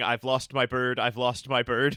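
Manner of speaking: put-on super nervous voice. Retelling a tv scene of a character standing in the street, imitating someone super nervous. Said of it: "He is super nervous".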